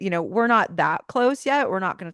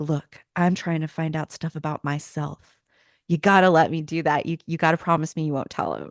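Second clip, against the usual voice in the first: put-on earnest pleading voice, lower pitch; 3 semitones lower than usual. Retelling how Sam asks Ellen not to tell Dean: imitating Sam earnest and sincere. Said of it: "earnest and sincere".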